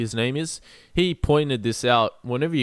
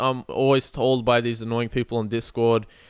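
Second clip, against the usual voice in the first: ordinary delivery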